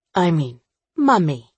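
ordinary delivery

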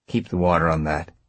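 ordinary delivery

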